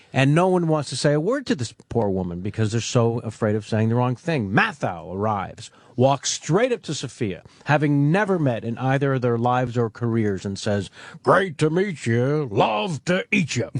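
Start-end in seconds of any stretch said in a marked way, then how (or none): 11.3-13.7 unhurried, leisurely, slow, drawn-out character voice. Retelling how a late actor greeted a colleague: Walter Matthau impression. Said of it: "that's a great impression".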